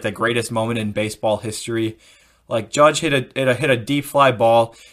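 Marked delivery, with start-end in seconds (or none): none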